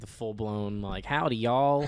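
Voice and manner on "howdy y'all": put-on Southern accent, quieter. Recalling his childhood accent: imitating his childhood Southern accent. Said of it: "I had an accent when I was really young".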